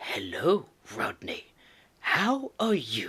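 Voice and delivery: slow, swooping "hello". Imagining the Kingpin greeting someone in a restaurant: Kingpin voice. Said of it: "the Kingpin coming up to you".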